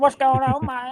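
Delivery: put-on very high Kentucky accent. Recalling a Spanish speaker who picked up your English, act out his greeting, imitating a Cuban with a Kentucky accent. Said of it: "A Cuban with the Kentucky accent".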